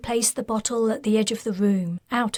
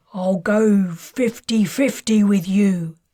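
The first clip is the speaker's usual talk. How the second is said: slow, loud, pained growl; 5 dB louder than usual. A man kneeling on the floor speaks up to Mika, growling. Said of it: "he growled".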